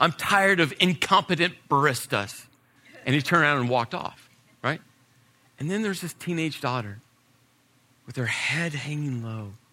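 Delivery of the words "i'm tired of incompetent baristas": emphatic, indignant, huffy, loud delivery pitched up. Retelling a father's complaint in a coffee line: imitating a loud, emphatic huffy complaint. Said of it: "this just huff and puff and this loud statement".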